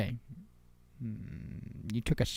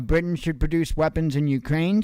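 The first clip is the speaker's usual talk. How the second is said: ordinary delivery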